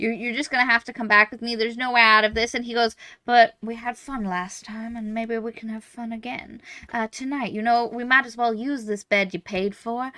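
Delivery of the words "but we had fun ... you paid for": put-on cowboy-style accent. Retelling a story, the speaker voices the assassin's reply in a cowboy voice. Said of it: "Why did you go into a cowboy voice?".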